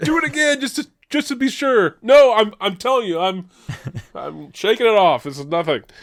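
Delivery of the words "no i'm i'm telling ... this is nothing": mock forced calm, strained, holding back a scream. Speaker acting out a stabbed man insisting he is fine, mock holding in a scream. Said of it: "trying so hard not to scream".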